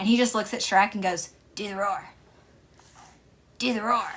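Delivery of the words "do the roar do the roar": spot-on cartoon kid voice. Retelling a film scene where a kid says a line: Bobby Hill voice. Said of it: "he sounds exactly like Bobby Hill".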